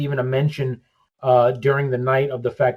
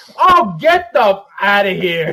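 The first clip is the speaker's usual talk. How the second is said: put-on slow, frustrated, sore-loser outburst; 7 semitones higher, 5 dB louder than usual. Retelling how dad reacted when his wrestler lost: imitating dad's frustrated outburst. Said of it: "I would hear him go".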